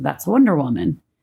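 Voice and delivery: ordinary talk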